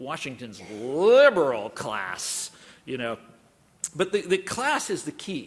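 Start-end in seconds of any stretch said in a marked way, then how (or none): 0.0-2.5 sneer, contemptuous heavy stress on liberal. Quoting the phrase Washington's liberal class, mock-sneering stress on liberal. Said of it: "delivered with the sort of sneering emphasis on the second word".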